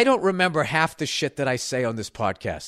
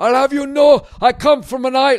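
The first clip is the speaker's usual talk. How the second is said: put-on shrill, very high, very loud, botched Scottish accent; 10 semitones higher, 8 dB louder than usual. Retelling what a man from a Scottish island said, in a bad Scottish accent. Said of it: "let me try to do a bad Scottish".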